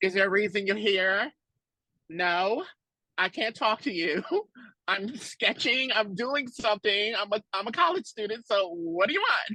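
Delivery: put-on curt, serious, all-business, standoffish tone. Imitating the other speaker's very serious energy back then, in a mock-serious reserved tone. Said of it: "so that was just your energy back then".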